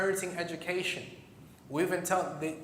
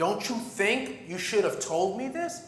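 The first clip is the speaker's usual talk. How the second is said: acted-out, mock-furious, enraged angry outburst; 2 semitones higher than usual. Retelling how a man reacted when told the news, retelling his enraged outburst. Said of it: "he goes into a rage".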